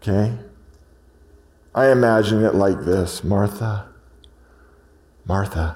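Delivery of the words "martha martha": soft, gentle, loving calling voice. Imagining how Jesus said her name, Jesus saying Martha gently. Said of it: "With all the love and holiness and truth and grace that is Jesus, with no condemnation, but trying to get her attention".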